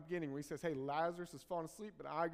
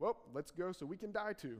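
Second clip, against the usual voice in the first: wry, mocking, sarcastic quip. Retelling a disciple's remark about going to die too: imitating a sarcastic remark. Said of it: "that sarcasm".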